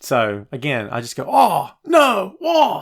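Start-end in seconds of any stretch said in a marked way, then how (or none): 1.3-2.8 play-acted overwhelmed, can't-keep-up outcry, pitched up. Imitating himself watching three shows at once on three screens: overwhelmed self-impression. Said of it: "That's my impression of me watching all three shows".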